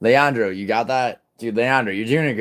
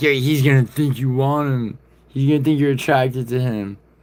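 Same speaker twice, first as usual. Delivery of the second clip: high, needling, accusatory put-on voice; 5 semitones higher, 3 dB louder than usual. Retelling what he said after Mila defended the speaker: imitating Moz. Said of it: "and he's like".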